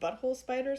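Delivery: ordinary delivery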